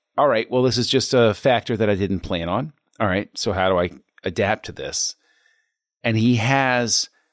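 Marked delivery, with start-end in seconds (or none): none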